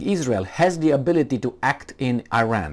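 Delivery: ordinary talk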